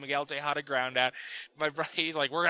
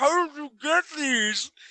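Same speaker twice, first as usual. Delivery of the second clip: very high, loud, acted words through full mouth; 12 semitones higher, 6 dB louder than usual. Retelling what a man said with a mouthful of burrito: mimicking a full mouth. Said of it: "he goes with a mouthful of burritos".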